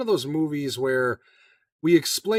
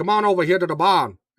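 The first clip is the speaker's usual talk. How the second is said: put-on Cajun accent, loud; 3 semitones higher, 5 dB louder than usual. Imitating an actor in a movie: Wilford Brimley fake Cajun accent. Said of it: "that's just how he talks the whole time".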